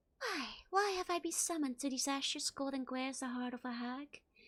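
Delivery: distant, ghostly half-whisper. Narrator voices a spirit speaking from within an urn of ashes; faraway half-whisper from urn. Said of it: "A faraway voice whispers up from within the urn".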